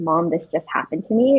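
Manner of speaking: ordinary delivery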